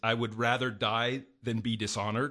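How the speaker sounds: ordinary talk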